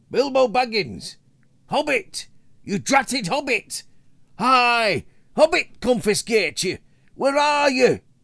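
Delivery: loud, very high, calling shouts. Narrator voicing dwarves searching in the darkness for the lost hobbit, shouting and calling out. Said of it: "They shouted and called".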